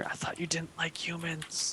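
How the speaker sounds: very quiet, close whisper. Voicing a character who leans over at a party: whispering in her ear. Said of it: "leans over and whispers in your ear".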